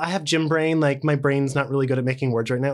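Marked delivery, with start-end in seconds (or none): none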